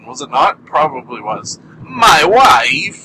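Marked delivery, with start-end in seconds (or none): 1.8-2.8 horrible put-on voice, belted out high, loud, badly. Retrying the catchphrase his guests are made to say: Borat impression. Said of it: "that was a horrible Borat impression".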